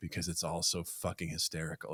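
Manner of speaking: play-acted chilling menace with rage hidden underneath. Retelling a film scene where a character leans in to a kid: imitating a chilling tone. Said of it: "He says it in such a chilling tone".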